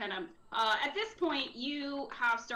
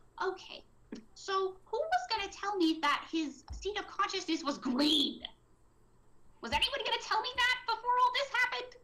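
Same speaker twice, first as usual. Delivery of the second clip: hushed angry whisper, much higher; 9 semitones higher than usual. Iris, not thrilled by the situation, speaks to you all in Iris's hushed angry whisper. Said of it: "in a very hushed, angry whisper".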